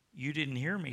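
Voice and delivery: ordinary talk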